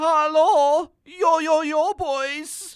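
fake urban German accent. Introducing the host character Batty Fledermaus, greeting in his urban German accent. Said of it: "What kind of accent is that?".

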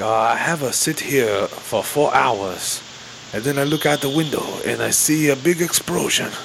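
put-on Chinese-accented voice, pitched high. Complaining about a translator, the speaker mimics his mock chinese accent. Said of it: "the translator has like in a Chinese accent".

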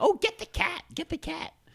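voice pushed way up to a very high pitch. Retelling what Olivia Colman said when someone brought a cat: Olivia Colman impression. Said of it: "that's my Olivia Colman impression".

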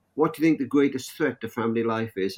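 normal talking voice

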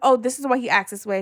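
ordinary delivery

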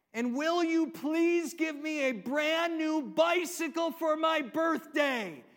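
near-shouted, loud, high-pitched pleading voice. Telling a joke about a little boy praying, retelling his much louder voice. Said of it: "in a much louder voice".

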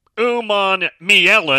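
very slow sounding out. Listing players he hopes to recruit, slowing down for a hard name. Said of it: "I have to say that slow".

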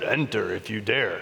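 very low, forced-deep voice. Retelling how he said it at the decorated house: lowered, deeper voice. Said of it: "he lowered his voice. ... He lowered it as well as he could".

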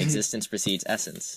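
ordinary talk, nothing marked

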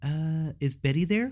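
faked girlish voice, high, slow and drawn out. Retelling how he called a girl's house phone: imitating his own past girl voice. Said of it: "I would always make that girl voice".

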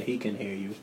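gentle, reassuring, hushed voice.

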